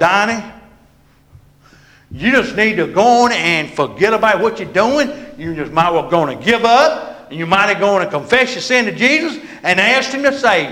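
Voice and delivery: acted-out loud, commanding yelling voice. Acting out an imagined voice yelling at the speaker, imitating a yell. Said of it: "if the Holy Spirit was yelling at me".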